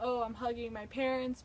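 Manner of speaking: plain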